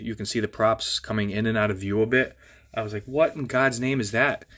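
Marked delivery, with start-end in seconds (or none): none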